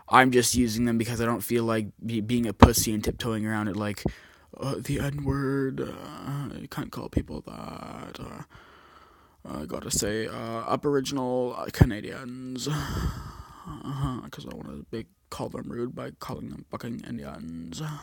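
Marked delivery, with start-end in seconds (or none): 4.5-17.8 put-on, drawn-out, moody, dramatic campy voice. Mocking people who tiptoe around words: put-on emo drag queen voice.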